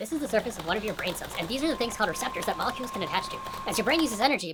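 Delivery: rattled off fast in a high-pitched rush. Rahi trying to explain how caffeine wakes you up, fast and high-pitched. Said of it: "(fast and high pitched)".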